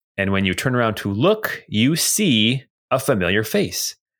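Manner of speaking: ordinary talk, nothing marked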